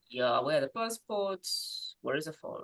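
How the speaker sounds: calm, unbothered, low and easy voice. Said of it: "I'll just be inside saying".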